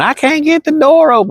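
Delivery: play-acted, very high, shrill screaming cry. Retelling what Grandma screamed while she had you pinned down: retelling a scream. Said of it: "now she's screaming".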